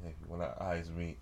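voice starting low. Showing how to start a pickup line to someone: starting low. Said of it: "you can start off starting low like this".

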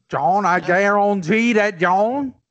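imitated Creole accent. Bantering with friends about a Cajun-sounding accent, Creole accent imitation. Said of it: "That was my Creole imitation".

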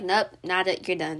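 ordinary delivery

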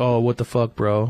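ordinary talk

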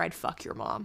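hushed whisper, close to the ear. Retelling what a senior football player whispered: imitating a whisper. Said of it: "he just whispers in my ear".

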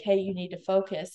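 ordinary talk

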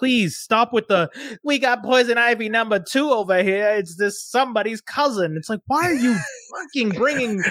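put-on Brooklyn accent. Ranting on a podcast about CW Bat Family shows, in a Brooklyn Harley Quinn accent. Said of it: "is that your Brooklyn Harley Quinn accent".

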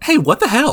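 very high, kindest-possible, sweet complaining tone. Retelling game villagers' complaint in the nicest, kindest way possible. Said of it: "in the nicest, most, like, kindest way possible".

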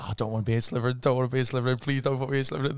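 put-on panicked, frantic voice. Retelling a Sorting Hat scene: imitating someone panicking. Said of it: "he's, like, panicking".

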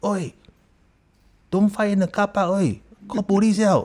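put-on, very high, loud shout. Retelling how they yelled at fighters in the car park from a window: imitating own shout. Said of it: "I shouted".

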